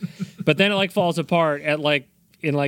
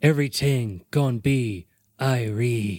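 very slow, drawn-out put-on Jamaican accent; 3 semitones lower than usual. Acting out a request to hear the accent: Steven Seagal's put-on Jamaican accent. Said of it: "you really wanna do the accent?".

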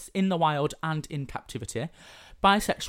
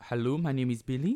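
attempted French accent on English words; 3 semitones lower than usual. Asked for a French accent, introducing the name Billy: attempted French accent. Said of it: "Can you do a French accent?".

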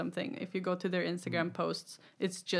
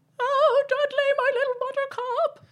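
frantic, doting mother voice, very high, shrill, loud; 10 dB louder than usual. Retelling a scene where the mother panics: imitating a mother freaking out. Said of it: "The mom is freaking the fuck out".

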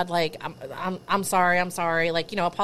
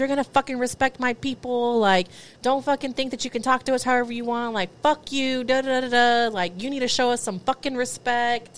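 furious, high-pitched swearing rant; 5 semitones higher than usual. Retelling a person yelling at a security guard, retelling someone screaming. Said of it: "starts screaming and cussing at the security guard".

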